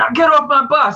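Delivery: shrill, very high, loud scream. Retelling what a man who came onto the bus did, imitating someone screaming. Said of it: "And then he starts screaming".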